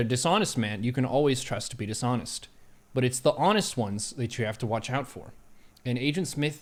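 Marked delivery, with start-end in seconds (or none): none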